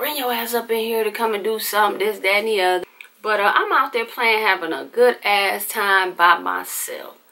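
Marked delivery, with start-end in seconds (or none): 0.0-2.0 mock hollering, faster. Recalling mom calling down from the upstairs window, retelling mom's hollering. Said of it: "she be hollering down there sometimes".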